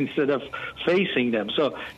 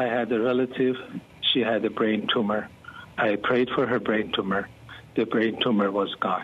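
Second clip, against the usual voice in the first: low, flat, level, emotionless monotone; 5 semitones lower than usual. Retelling a man sharing a healing testimony, imitating his monotone voice. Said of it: "monotone voice".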